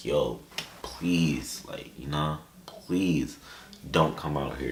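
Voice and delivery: put-on desperate pleading, slow and near tears. Retelling a phone call with their mom, retelling own begging. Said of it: "I was begging".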